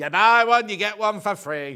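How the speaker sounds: loud, put-on pirate voice. Showing the other speaker how the pirate in the advert said it: pirate voice. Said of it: "You're doing the pirate".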